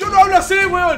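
very loud, high-pitched, furious and angry. Retelling how someone reacts to being imitated: acting out an angry protest. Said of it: "Y Misa se encabrona".

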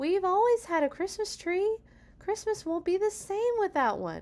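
very high, swooping, sing-song whiny voice. Quentin answers his papa's decision, whining. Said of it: "whined Quentin".

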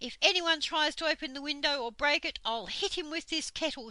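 loud, high-pitched shout. A character dancing about with a kettle shouts as someone batters the door. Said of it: "shouted Moonface".

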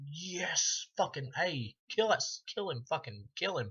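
play-acted excited cheering, high, swooping, drawn-out. Retelling cheering for a killer in a film: imitating own excited shouting. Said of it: "I'm like".

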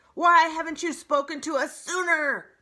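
very loud, piercing screeching cry. An owl calls down from high in a tree to a robot, screeching. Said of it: "screeched the owl".

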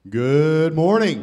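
loud arena announcer voice. Greeting the audience this morning: Rupp Arena voice. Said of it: "That's my Rupp Arena voice".

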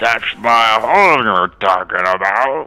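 put-on very loud, booming, slow drunk dwarf voice. Voicing a drunk dwarf who objects to the party's words: drunk dwarf voice. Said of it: "You hear the dwarf".

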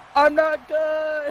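high-pitched, slow, loud scream. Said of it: "and just screams".

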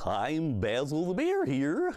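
naive, high, swooping polar bear puppet voice. Puppeteer showing how his polar bear character spoke, in Basil the Bear voice. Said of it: "he kind of spoke like this".

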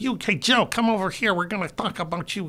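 put-on thick Chicago accent. Retelling how a showrunner from Chicago talks, imitating Ed's thick Chicago accent. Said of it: "'cause his accent is so".

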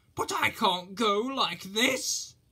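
high, drawn-out storybook read-aloud exclaiming. Reading a story aloud, Henry answers his driver's wake-up call: exclaiming. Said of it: "exclaimed Henry".

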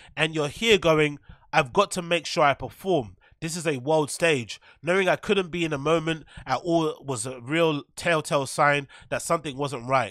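ordinary delivery

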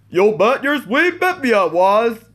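high, swooping, sing-song cartoon character voice. Reacting to the Jawbreaker Ed, Edd n Eddy parody, doing an Ed impression. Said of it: "That was my impression of Ed".

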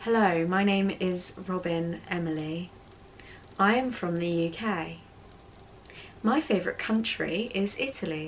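attempted soft, robotic, machine-like British accent. Speaker trying out a British accent, British accent sounding like Siri. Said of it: "I just sound like Siri".

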